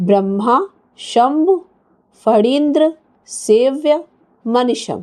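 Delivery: slow, split into separate word chunks with pauses. Showing how to say a long phrase in three or four parts: pauses between each word. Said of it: "हम इस शब्द को तीन चार भागों में divide करके बोलेंगे".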